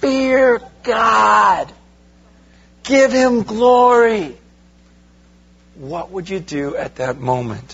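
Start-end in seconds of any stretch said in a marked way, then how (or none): 0.0-4.4 mock, very slow, high, drawn-out heavenly angelic cry. A speaker asks the audience to picture an angel, imitating an angel screaming. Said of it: "you see this angel scream out".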